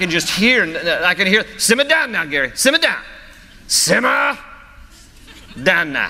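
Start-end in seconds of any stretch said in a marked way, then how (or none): 1.6-6.1 put-on Cajun accent, higher. Imagining the Lord speaking to him, in a Cajun accent. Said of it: "in like a Cajun voice like that".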